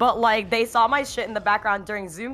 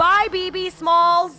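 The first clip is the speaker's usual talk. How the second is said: screamed at the top of her lungs, high-pitched; 10 semitones higher, 6 dB louder than usual. Retelling how the OM said goodbye as the speaker left, retelling a scream. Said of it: "screams at the top of her lungs".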